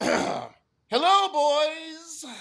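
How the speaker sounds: very high, emphatic, all-caps style reading. Asked to read a scripted line exactly as written in caps, reading an all-caps line. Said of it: "Read it for me like it's written".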